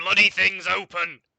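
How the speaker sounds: very loud, blunt, booming shout. Voicing a man calling out from inside, kind of shouting. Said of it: "Just just kind of shouts. He goes".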